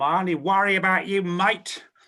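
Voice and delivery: put-on Australian accent. Recalling being offered a job, quoting in Mike Nolan's Australian accent. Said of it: "So he said in an Australian accent".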